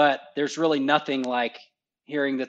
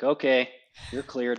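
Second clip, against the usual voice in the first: mock bored, flat tone. Retelling a controller's radio reply after tanking: imitating a bored controller. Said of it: "they sounded bored".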